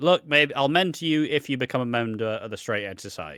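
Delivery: ordinary delivery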